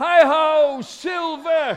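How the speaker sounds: mighty rallying cry, "hi-ho" stretched. Leading listeners to say it along with him, mighty cry. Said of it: "with a mighty cry of".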